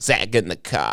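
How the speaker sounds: put-on Boston accent, just talking. Trading silly accent bits, saying a line in a boston accent. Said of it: "let's do a Boston accent".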